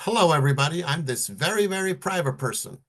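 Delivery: booming, loud, high showman stage voice. Acting out a person greeting an audience from a big stage, loud greeting. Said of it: "they say with a loud voice".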